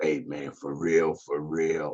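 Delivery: small husky voice, dropped low and hushed. Acting out how he would talk to Greg, in a husky voice. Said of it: "he throw the little husky voice".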